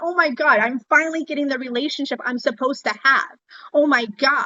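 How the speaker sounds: normal talking voice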